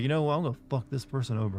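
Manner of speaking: ordinary talk, nothing marked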